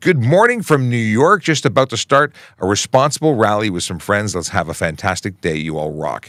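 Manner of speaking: ordinary talk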